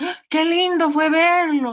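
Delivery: loud, high exclamation with strong feeling. Teacher models exclamations for the class, emotional exclamation. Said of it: "Así, con más emoción".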